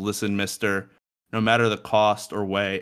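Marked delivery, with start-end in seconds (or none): none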